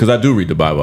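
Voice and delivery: ordinary delivery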